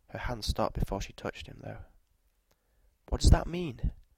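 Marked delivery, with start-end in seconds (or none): 3.1-3.9 peevish, impatient, high-pitched querulous voice. A woman questions a man who has just ended the conversation; querulous, impatient. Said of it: "There was a querulous note to her voice".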